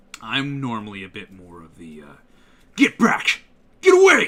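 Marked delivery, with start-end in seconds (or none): 2.7-4.2 rough, gruff tough-guy shout, high and very loud. An actor showing his range and the parts he is usually cast in; gruff tough-guy voice. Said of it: "I'm more of the the gruffer kind of guys".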